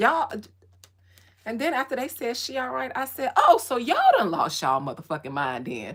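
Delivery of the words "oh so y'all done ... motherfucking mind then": loud, swooping, confrontational scolding tone. Retelling what was said to spirits: retelling a confrontational scolding. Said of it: "I talk to spirits like that".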